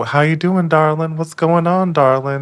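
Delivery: very high motherly woman's voice. Retelling a phone call, imitating Clint's mom. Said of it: "And his mom is, you know, like".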